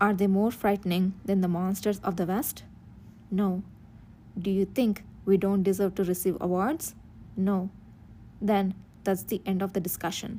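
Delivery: ordinary delivery, nothing marked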